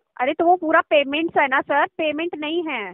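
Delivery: irritated, insistent tone. Correcting the caller's spelling of an email address once more: angry. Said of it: "आप गुस्सा मत हो".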